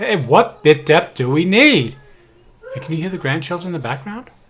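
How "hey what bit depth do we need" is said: loud, slow calling voice. Testing the recording, switching from regular to a loud voice. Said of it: "now I'm going to do a loud voice".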